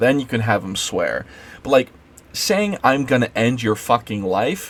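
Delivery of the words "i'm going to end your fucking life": ordinary talk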